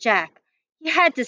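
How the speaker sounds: plain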